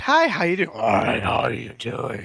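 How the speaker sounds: put-on demon voice, swooping and sing-song. Guessing aloud how a demon talks, in a mock demon voice. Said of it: "Demon! Does it talk like this?".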